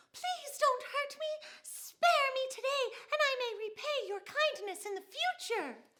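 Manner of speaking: small, very high, airy, nervous voice. Demonstrating a described voice type: small, high, airy nervous voice. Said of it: "a small, high pitched voice, a quick, nervous pace, and an airy sound".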